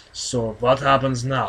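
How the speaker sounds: put-on Russian accent. Asked by the co-reader to say it again, repeating the line in Russian accent. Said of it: "So say it again".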